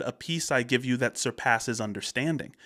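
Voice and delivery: ordinary talk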